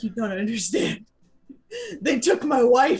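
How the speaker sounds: crying, pleading through tears, swooping pitch. Pleading in character from a cliff while holding the key: acted crying plea. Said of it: "so I'm using the tears to my advantage".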